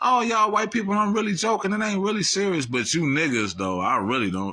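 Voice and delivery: teasing half-joking banter. Retelling how a comedian delivered a joke: imitating someone smiling while joking. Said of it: "Let me smile".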